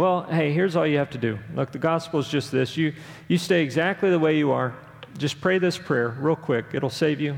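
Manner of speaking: ordinary talk, nothing marked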